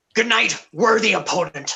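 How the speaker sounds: put-on Scottish accent on the whole line. In a game, the speaker delivers a character's line: Scottish accent. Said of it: "I haven't used a Scottish accent in a while".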